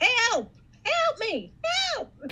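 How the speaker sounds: shrill, very high-pitched, swooping yelling. Retelling how a certain person yelled while getting arrested: imitating someone yelling for help. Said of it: "was yelling".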